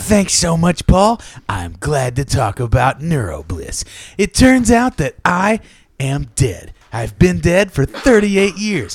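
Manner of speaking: radio host voice with a rasp. Reading a joke quote about a drink: Casey Kasem impression. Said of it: "Your Casey Kasem's getting better".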